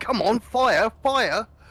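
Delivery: high-pitched, drawn-out, frustrated shouting. Retelling yelling at the screen when the weapon would not fire: imitating own screaming. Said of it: "screaming at the screen".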